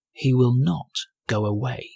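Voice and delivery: unhurried, slow, measured and deliberate. Narrator reads the wolf's line before grandmother answers, very soft. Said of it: "said the wolf very softly".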